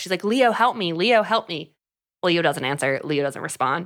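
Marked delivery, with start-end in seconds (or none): 0.2-1.7 mock, repeated, pleading, crying voice. Recapping a scene where a hanging woman calls out, retelling a cry for help. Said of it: "She cries for help".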